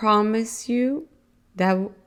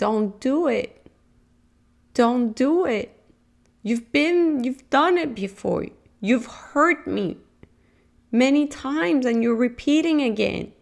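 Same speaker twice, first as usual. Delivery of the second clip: put-on small child's voice, tearful and pleading; 4 semitones higher than usual. Describing a person's inner child pleading in the background, imitating a crying child. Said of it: "crying and saying".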